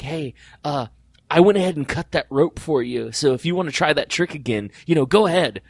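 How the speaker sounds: hushed whisper. Retelling what a helper backstage said to him: imitating an offstage whisper. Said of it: "in an offstage whisper".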